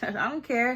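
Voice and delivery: nonchalant tone. Retelling how the suspects reacted: imitating a nonchalant shrug-off. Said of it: "nonchalant ones".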